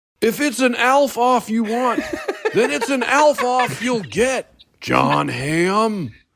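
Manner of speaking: very high, drawn-out character voice. Answering a rival's voice notes in an ALF-off: ALF voice. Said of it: "Was that perfect?".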